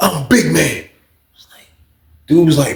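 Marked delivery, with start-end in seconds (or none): 0.0-0.8 mock superhero voice, boastful. Retelling how an inmate introduced himself: imitating a superhero voice. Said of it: "like he was a Predator superhero".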